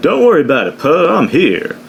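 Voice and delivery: high, swooping, sing-song sci-fi pilot character voice. Retelling a movie scene where a pilot arrives: Lando impression. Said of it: "that was my Lando, uh, impression".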